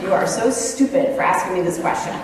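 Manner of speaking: ordinary talk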